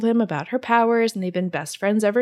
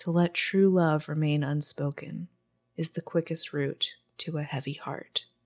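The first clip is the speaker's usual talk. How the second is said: very soft, deep, murmured voice; 5 semitones lower, 7 dB quieter than usual. Retelling what a friend, Warren, told a girl, in Warren's soft, deep voice. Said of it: "in a very soft, deep voice says".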